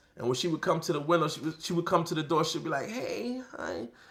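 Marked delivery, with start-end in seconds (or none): 2.9-3.9 meek, shy, timid, soft little voice. Retelling how a girl greeted him at her door: imitating a timid greeting. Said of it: "all timid".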